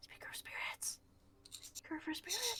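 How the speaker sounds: hushed, very quiet whisper. In a tabletop game, addressing a ghost: library whisper. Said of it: "It's library whisper".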